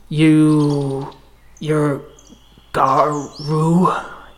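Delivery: labored, struggling growling voice. A narrator voices a figure speaking a broken garu tongue, with struggling growls. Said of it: "struggling to get the right growls in his voice".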